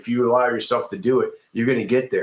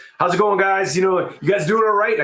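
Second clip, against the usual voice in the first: mock very high, upbeat, full-energy voice; 9 semitones higher than usual. Retelling how he walked in and greeted his team, acting out an energetic greeting. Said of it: "I came in with the same energy".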